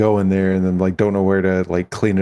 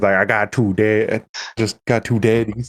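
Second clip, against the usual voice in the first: put-on line in a Southern American accent; 2 semitones higher than usual. Describing how Soup delivers a joke, imitating Soup's southern accent. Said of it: "when he has a southern accent".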